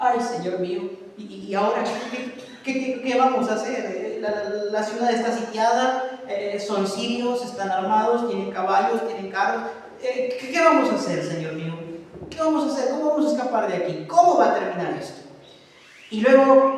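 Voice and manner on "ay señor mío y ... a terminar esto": normal talking voice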